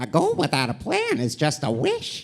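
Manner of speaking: storybook cartoon character voice with swooping pitch. Performing a requested favorite line as Overhaul: Overhaul voice. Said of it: "Do your, your favorite line, the, the goal one".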